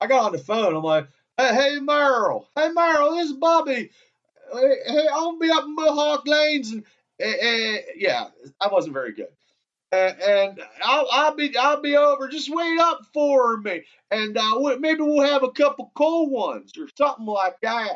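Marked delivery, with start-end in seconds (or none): 1.4-18.0 put-on high-pitched Louisiana accent. Retelling a phone call to Merrill, doing a Brister impression in a Louisiana accent. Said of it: "my Louisiana accent and impersonation of Brister".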